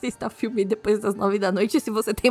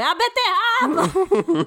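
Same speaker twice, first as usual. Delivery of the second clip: mock shouting yell, much higher pitched; 8 semitones higher, 3 dB louder than usual. Telling how their mother yelled back an answer, retelling mom's yell. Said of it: "ela só gritou".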